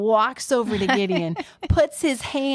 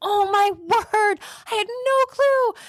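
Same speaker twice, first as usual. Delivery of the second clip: mock very high, drawn-out, stunned terrified voice; 11 semitones higher than usual. Retelling how Gideon reacts after the angel vanishes: imitating terrified Gideon. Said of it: "And Gideon's terrified".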